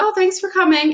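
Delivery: high-pitched, gracious hosting tone.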